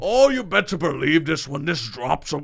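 poor put-on Scottish accent. Telling a co-host about the upcoming Scotland trip: bad Scottish accent. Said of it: "How's my accent?".

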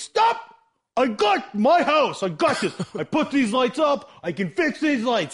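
mock very high, stubborn, indignant, frantic screaming. Retelling a friend's father on a ladder answering his wife, imitating a man screaming. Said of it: "And he's screaming at her".

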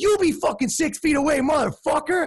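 very high, mouthy, sassy yelling. Retelling what the sellers yelled back at the cops: imitating sassy yelling at cops. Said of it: "they're super sassy with the cops".

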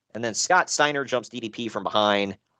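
ordinary talk

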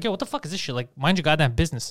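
ordinary delivery

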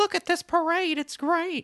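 clumsy, squeaky, high-pitched cartoon dog voice, badly done. Recalling the Christmas parade broadcast, doing a Snow Buddies dog voice. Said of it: "That was the worst impression of those dogs' voices".

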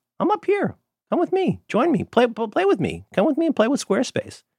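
very high, lilting, swooping, alluring sing-song voice. Reading a Squarespace sponsor spot on the show: high-pitched voice. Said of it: "my voice gets high when I talk about Squarespace".

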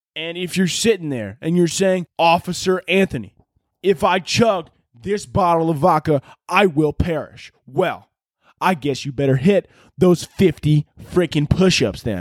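put-on southern-accented frat-boy military officer voice. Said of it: "a southern accent mixed with a frat guy voice".

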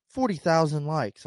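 normal talking voice

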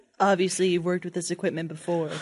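put-on seductive voice. During a timed word game, say an odd line in a mock sexy voice. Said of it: "strange things to say in a sexy voice".

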